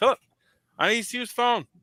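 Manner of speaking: put-on Newfoundland accent, pitched very high. Retelling an aunt interrupting a phone call, in a put-on newfoundland accent. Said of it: "she's got a, a Newfoundland accent".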